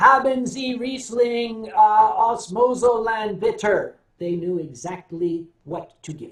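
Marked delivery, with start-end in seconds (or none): 0.0-4.0 put-on thick American accent on German, slow and loud. Recalling ordering Riesling in German, in his thick American accent. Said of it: "with my thick American accent".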